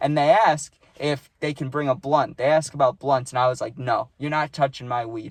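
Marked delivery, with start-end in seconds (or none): none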